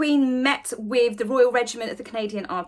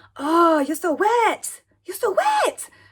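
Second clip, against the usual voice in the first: put-on Chinese accent, pitched high; 6 semitones higher, 3 dB louder than usual. Retelling a story, quoting a woman before she began, imitating Ching Ching's accent. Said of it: "I have to do an accent here".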